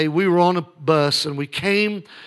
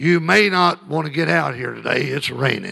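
put-on gravelly tour director voice; 3 semitones lower than usual. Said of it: "He had a gravelly voice".

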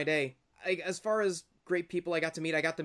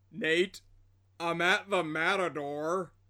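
all fight gone, utterly defeated, beaten tone. Retelling what he said when he called from the matador, imitating an utterly defeated voice. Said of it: "in this utterly defeated voice said".

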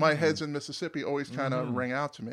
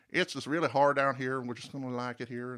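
put-on Texan drawling accent. Quoting parents who never want to leave, sounding like George Bush. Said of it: "that sounded like George Bush".

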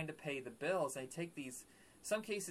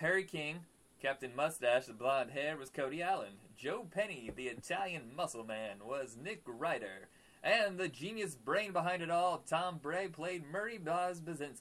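put-on radio broadcast announcer voice; 3 semitones higher than usual. Speaker reads out the show's cast names: radio announcer voice. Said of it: "Did you like my radio voice?".

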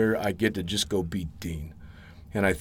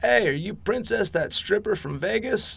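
shrill, squeaky British scream, very high; 12 semitones higher than usual. Recalling walking into the hangar, someone across the room yells: retelling a squeaky British scream. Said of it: "this squeaky British voice from the other side of the room screaming".

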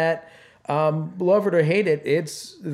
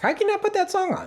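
very high-pitched woman's voice; 14 semitones higher than usual. Speaker quoting the listener's sister-in-law and niece, in a high-pitched lady voice. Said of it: "You just did a higher-pitched voice because you were doing because the voice of a lady".

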